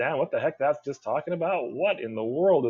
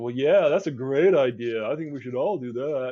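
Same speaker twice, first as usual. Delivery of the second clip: dripping with sarcasm, insincere approving tone. Showing a class what sarcasm sounds like in an op-ed: sarcastic. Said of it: "Sarcasm would be like".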